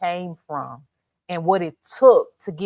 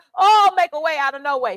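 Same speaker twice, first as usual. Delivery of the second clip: mock pleading cry, higher pitched; 9 semitones higher than usual. Imitating Israel crying out when oppression comes: imitating people crying out for help. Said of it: "Israel cries out".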